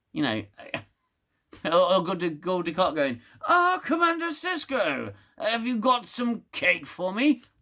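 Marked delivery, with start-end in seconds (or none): 3.4-7.3 bad put-on alien voice, high and swooping. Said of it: "Bad impression".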